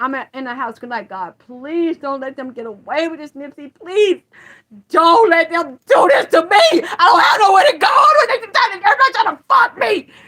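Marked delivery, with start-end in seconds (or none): 1.1-10.0 desperate, loud, rising scream. Recounting what he cried out at home when nobody would answer, retelling a scream. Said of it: "And I'm just screaming at this point".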